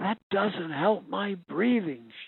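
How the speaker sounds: gasping, words gasped out. A woman in a hospital bed refuses to lie back, gasping. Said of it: "she gasped".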